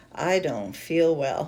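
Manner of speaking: put-on classic dazed, slow, woozy drawl. Retelling a patient speaking suddenly after an epidural: imitating a woozy voice. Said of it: "in a very classic woozy voice".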